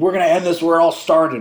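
high, loud mock yell. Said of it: "yells at Turnbull".

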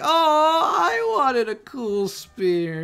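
whiny, high sing-song, swooping up and down. Acting out Ginro after he runs off: whiny Ginro voice. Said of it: "he starts getting very whiny".

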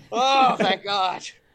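panting breathlessly with relief. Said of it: "just panting".

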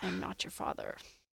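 soft, hushed angel voice. Retelling a scene, answering a man about to lose his family, Castiel voice. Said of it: "he does in his cast voice".

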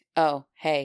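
unenthusiastic male voice. Reading a story aloud, a male voice's reply: much less enthusiastic male voice. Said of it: "Then a much less enthusiastic".

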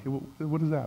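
hushed half-whisper under the breath. Retelling calling the waiter over at a restaurant: retelling a half-whisper. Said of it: "you start to, like, whisper".

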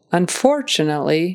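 stress on second syllable of "unfortunately". Pronunciation lesson on the word unfortunately: stress on second syllable of 'unfortunately'. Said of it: "the emphasis is on that second syllable".

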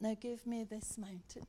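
quiet whispering. Leading a group in prayer, whispering. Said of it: "practice that prayer as a whisper".

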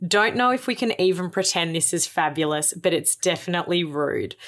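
normal talking voice

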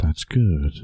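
soft, creepy voice like a recording. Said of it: "Soft, soft, creepy voice".

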